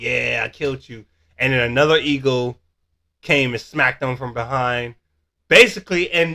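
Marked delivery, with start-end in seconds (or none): none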